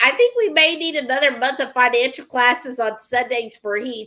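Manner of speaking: plain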